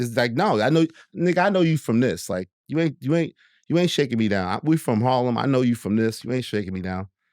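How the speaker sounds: plain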